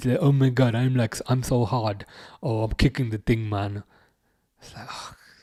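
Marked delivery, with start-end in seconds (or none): 0.2-3.8 acted arrogant diva voice. Mocking a player's look after his kick: mocking Jude Bellingham as a diva. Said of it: "That is the perfect word for Jude Bellingham, diva".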